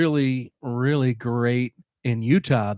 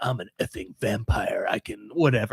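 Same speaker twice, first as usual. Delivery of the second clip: boastful voice trying to sound tough and rich; 3 semitones lower than usual. Retelling a movie line, imitating a tough rich guy. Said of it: "trying to be some tough rich dude".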